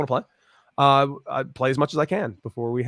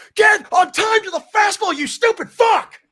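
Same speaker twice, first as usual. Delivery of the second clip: shrill, high, drawn-out holler; 6 dB louder than usual. Retelling stepping out of the box after a foul: imitating his own yell.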